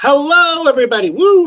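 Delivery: high volume. Greeting everyone at the start of the show: loud. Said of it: "I'm loud".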